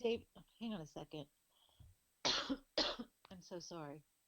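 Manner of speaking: choked-up voice, thick with emotion. Asked how a person is doing, the speaker answers, choked up. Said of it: "I get choked up here a little bit".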